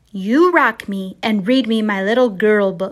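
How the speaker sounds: bossy, demanding little voice. Narrator quoting what a little girl told her at bedtime, retelling a command. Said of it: "When she said—well—commanded, really".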